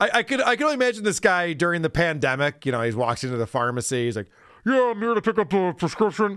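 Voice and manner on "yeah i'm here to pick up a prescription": garbled, muffled speech, as if through a mask. Acting out a customer at a pharmacy counter: imitating a hard-to-understand voice. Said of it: "Could you just lower your mask? I can't understand you".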